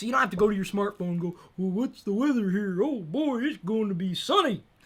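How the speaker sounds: high-pitched goofy cartoon dog character voice. Imagining checking the weather on a smartphone, doing a Goofy voice. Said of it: "That was my best Goofy impression".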